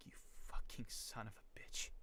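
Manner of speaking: breathy, spiteful, malicious whisper. Showing genuine emotion when cursing in character, a malicious curse. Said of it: "You hear the malice. How genuine that sounds".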